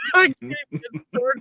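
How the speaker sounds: mock squeaky cracked voice.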